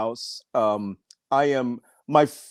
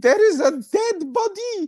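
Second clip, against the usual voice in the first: put-on strong, heavy French Canadian accent, higher. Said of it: "she's French Canadian, so she has this huge accent".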